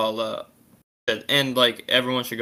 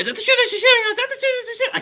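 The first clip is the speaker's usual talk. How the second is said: much higher, pitch rising higher each time; 5 dB louder than usual. Repeating a phrase faster and faster when told to, voice rising higher each time. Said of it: "My voice got higher and higher each time".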